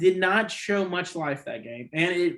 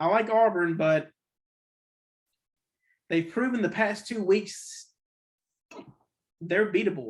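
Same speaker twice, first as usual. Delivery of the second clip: hiccups interrupting speech; 2 semitones higher than usual. Giving picks on teams to the folks listening, speaking with hiccups. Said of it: "got the hiccups".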